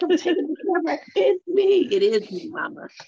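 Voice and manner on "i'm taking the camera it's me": put-on very high, proud little-kid voice. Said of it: "She's like".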